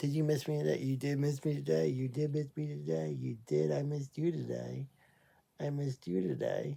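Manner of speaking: soft, hushed, sweet cooing singsong murmur.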